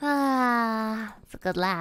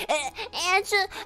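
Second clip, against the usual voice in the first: put-on high, slow, teary, confused little boy voice. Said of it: "he gets so confused".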